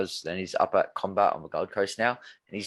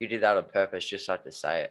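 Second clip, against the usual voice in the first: usual speaking voice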